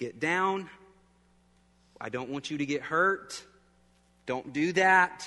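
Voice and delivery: firm, stern voice of authority. Retelling how he tells her to get off the rocker recliner; authoritative command. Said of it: "with an authoritative voice".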